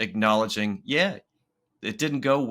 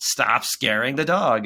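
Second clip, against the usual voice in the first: put-on elevated, raised voice; 2 semitones higher, 4 dB louder than usual. Retelling telling a child to stop scaring the dog: imitating own raised voice. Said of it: "And my voice was elevated".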